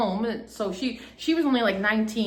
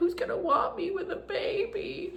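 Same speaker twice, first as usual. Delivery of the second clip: acted-out tearful voice through sobs, very high pitch; 10 semitones higher, 6 dB quieter than usual. Retelling asking mom a question: imitating own past crying. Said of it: "crying to my mom".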